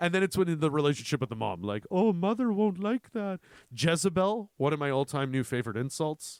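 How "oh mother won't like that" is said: gentle, mild-mannered, high-pitched voice. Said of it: "Ed Gein had a very soft-spoken voice".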